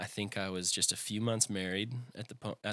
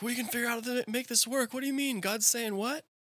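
very high, mock tearful crying, pleading. Retelling the band's reaction when told he would leave, imitating bandmates crying. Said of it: "and they're crying".

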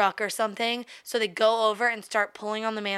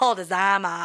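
put-on strong Boston accent; 2 semitones lower, 4 dB louder than usual. Retelling what he said, imitating a strong Boston accent. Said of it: "He had a super Boston accent".

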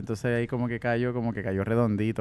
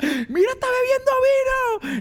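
very high, drawn-out yelling outburst; 7 dB louder than usual. Recalling seeing a pregnant woman drink wine, the speaker retells a yell.

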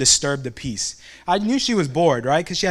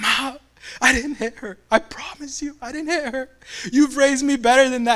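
put-on high, tearful, sobbing, pleading voice; 8 semitones higher than usual. Retelling walking in to face his mom as a kid: retelling crying to mom. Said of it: "I'm crying".

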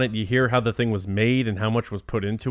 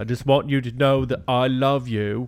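put-on speech with a British-sounding accent. A father imagining what he says putting his son on the bus, British-sounding accent. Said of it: "if it comes out that British".

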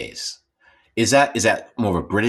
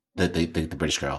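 ordinary talk, nothing marked

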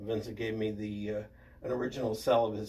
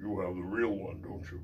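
very deep, low bass voice; 4 semitones lower than usual. Speaker quotes the film's star, in Rex Reason's very deep voice. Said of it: "he had a very deep voice".

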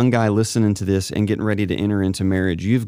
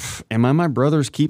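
dismissive, disrespectful scoff, pitched up; 5 semitones higher than usual. Picturing the scene as the speaker walks away: Cain sounding so disrespectful. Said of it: "so disrespectful".

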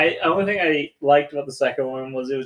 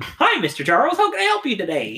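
put-on, pitched-up, sing-song voice; 9 semitones higher than usual.

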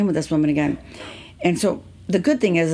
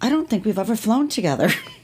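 put-on English accent, pitched up; 5 semitones higher than usual. Retelling what a woman said to her, in her English accent. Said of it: "She said in her English accent".

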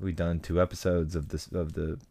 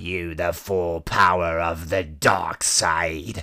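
dark, evil villain voice. Listing villains, one speaker does a Palpatine impression for the others. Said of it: "That was probably the best impersonation you've done".

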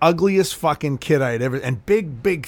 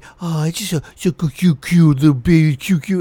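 sugary, gushing delivery; 4 dB louder than usual. Mocking how people talk to a toddler: imitating baby-talk. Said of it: "they'll come up to a kid and they'll be like".

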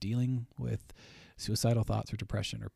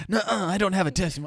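mocking, teasing put-on voice, much higher and slower; 11 semitones higher, 10 dB louder than usual. A host teases guest Bailey by voicing a reply, teasingly imitating Bailey. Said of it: "I'm just teasing".

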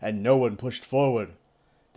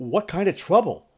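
insistent, demanding, pitched-up voice; 6 semitones higher, 4 dB louder than usual. Narrator voices Rand questioning the warder, demanding. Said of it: "Rand demanded".

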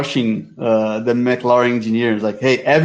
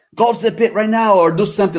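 mock urgent, high, radio-style shouting; 9 semitones higher than usual. Retelling someone coming on the radio and shouting instructions at a driver, retelling a radio shout. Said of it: "started shouting at Mick like".

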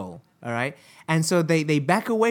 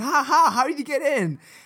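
very high, laughing, excited yell; 10 semitones higher than usual. Retelling a phone call with a man who got in somewhere, retelling a shout. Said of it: "I'm like shouting".

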